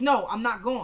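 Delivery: ordinary talk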